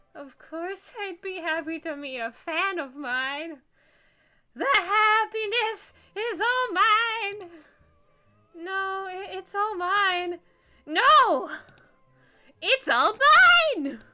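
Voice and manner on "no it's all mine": overexcited, excited shouting. Voicing an overeager fan in a game, getting too excited: overexcited shouting. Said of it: "I'm getting too excited again".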